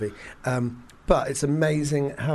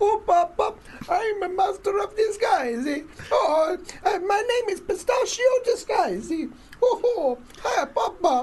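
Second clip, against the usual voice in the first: ridiculous put-on Italian accent, very high. Describing a film's lead, doing his ridiculous Italian accent as Pistachio Disguise. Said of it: "an annoying voice that he puts on".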